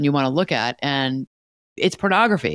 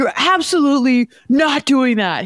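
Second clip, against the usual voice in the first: put-on scream, higher and louder; 10 semitones higher, 4 dB louder than usual. Retelling a son's reaction while crossing a busy street: imitating a son screaming. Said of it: "screaming at me".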